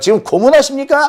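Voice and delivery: high-pitched, indignant, protesting tone.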